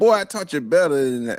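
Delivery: put-on disappointed, scolding grandmother voice. Imitating a grandmother scolding a grandchild caught stealing on camera: imitating a disappointed grandmother. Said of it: "grandma gonna be like".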